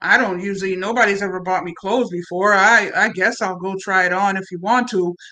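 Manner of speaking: dead-level, expressionless delivery. Retelling a story, quoting the man after she buys him clothes, in his flat voice. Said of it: "he says in his flat voice".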